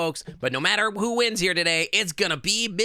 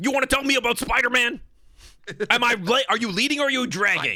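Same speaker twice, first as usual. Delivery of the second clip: put-on gruff voice, higher pitch; 4 semitones higher than usual. Trying out a J. Jonah Jameson impression for a character. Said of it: "a J J Jonah impression".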